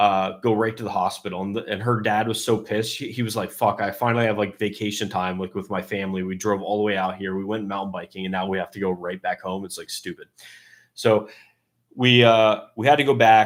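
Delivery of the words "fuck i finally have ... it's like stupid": usual speaking voice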